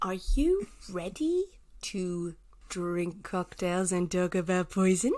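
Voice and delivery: strange, eerie, unsettling, creepy put-on voice. Speaker greets the other speaker in a strange, creepy voice. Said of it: "why did you have to do it in a strange, creepy voice?".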